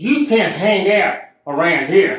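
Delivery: mock stern, commanding, authoritative voice, loud. Recounting a woman who told the speaker off near a bank: mimicking an authoritative voice. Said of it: "In a very authoritative voice".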